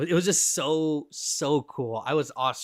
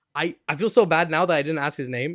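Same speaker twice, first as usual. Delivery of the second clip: plain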